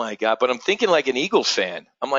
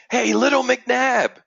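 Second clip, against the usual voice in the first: put-on shrill, very high, loud shout; 11 semitones higher, 3 dB louder than usual. Retelling walking down the stairs to leave, imitating a stranger yelling after them. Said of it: "this guy yells".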